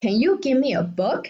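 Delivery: pitch climbing upward, questioning rise on book. Explaining English question intonation, rising pitch at the end on 'book'. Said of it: "The end of the sentence has a rising tone".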